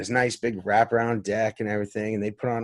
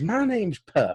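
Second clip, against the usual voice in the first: put-on child's voice doing pitched-up ninety-year-old man; 9 semitones higher than usual. Retelling a conversation with a five-year-old boy, the speaker imitates Puppy's old-man voice. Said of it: "sounded like a ninety year old man".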